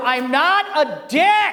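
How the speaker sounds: put-on very slow, high, drawn-out, stretched-out scream. Retelling a van ride past angry extras: imitating someone screaming. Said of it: "I'm screaming out the window".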